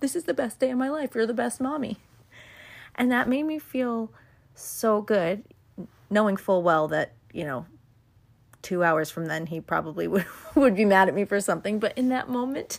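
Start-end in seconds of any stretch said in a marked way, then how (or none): 0.0-2.0 high, mock weepy, tearful happy crying. A mother retells what her son said on their walk, imitating happy crying. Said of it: "I'm crying happy tears".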